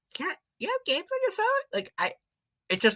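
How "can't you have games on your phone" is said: put-on very high, annoying, whiny little kid voice. Complaining about sounding annoying while editing, imitating an annoying little cousin. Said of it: "I sounded like that little".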